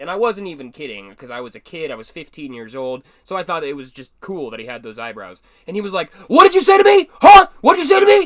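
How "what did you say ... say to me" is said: put-on enraged shout, higher and louder. Retelling a schoolmate confronting him over a remark: imitating someone in a rage. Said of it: "sent into a narcissistic rage".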